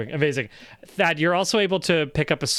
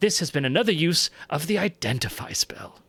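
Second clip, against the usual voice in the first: put-on helpful British-accented voice; 2 semitones higher than usual. Reading out a magic item description during a tabletop game, in a helpful British guy voice. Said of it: "which is just like a helpful British guy".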